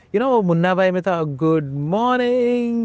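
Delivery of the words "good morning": put-on shouted, high-pitched voice. Retelling waking the kids in the morning: imitating a shout. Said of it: "I'll shout".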